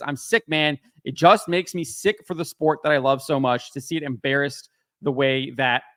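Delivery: ordinary delivery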